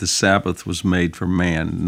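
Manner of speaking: normal talking voice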